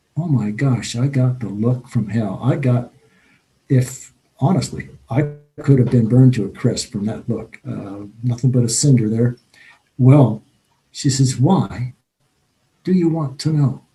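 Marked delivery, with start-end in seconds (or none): 11.3-13.7 put-on poshest upper-class British accent, laid on thick. Retelling how a woman answered a question about religion, in a posh British accent. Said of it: "In her most posh British accent".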